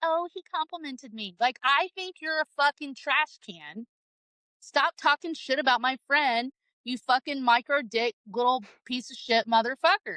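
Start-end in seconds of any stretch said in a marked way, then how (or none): 0.0-1.3 put-on vapid, dim, ditzy, gushing, airheaded girly voice. Mocking how a gullible girl would react to a compliment: mocking dumb girl voice. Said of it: "I'm not some dumb bitch that's gonna be like".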